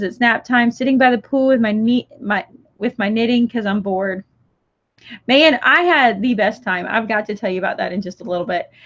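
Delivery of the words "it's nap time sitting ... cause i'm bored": ordinary talk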